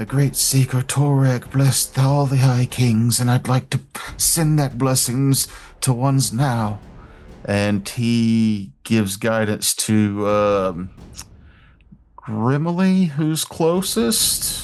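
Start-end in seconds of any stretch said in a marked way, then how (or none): 0.0-6.8 mumbled under breath, rattled off quickly. Game master voicing a character casting guidance, muttered under his breath. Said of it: "you hear him s- say under his breath".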